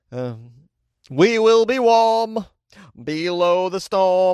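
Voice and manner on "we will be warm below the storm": very slow, shaky, stretched out, pitched up. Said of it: "not a very good [name] impersonation".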